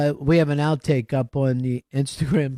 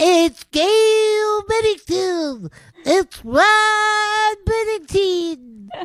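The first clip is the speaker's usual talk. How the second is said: put-on pitch slip, voice an octave higher than normal; 3 dB louder than usual. Retelling how the show opening sounded: imitating Vito's too-high voice. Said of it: "like an octave higher than he normally talks".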